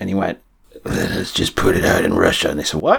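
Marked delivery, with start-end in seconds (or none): 0.8-2.5 soft, barely voiced whisper. Retelling what he said about putting the record out, whispered. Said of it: "You're whispering".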